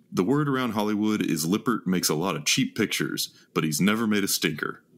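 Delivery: ordinary delivery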